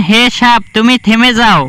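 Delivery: ordinary delivery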